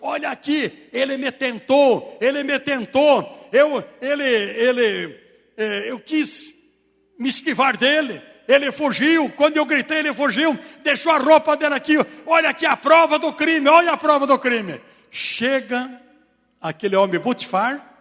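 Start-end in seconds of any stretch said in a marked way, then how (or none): none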